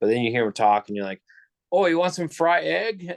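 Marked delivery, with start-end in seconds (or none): 1.7-3.0 strong put-on Chinese accent, very high-pitched. Describing how a military man from China talks, imitating strong Chinese accent. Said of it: "a really strong Chinese accent".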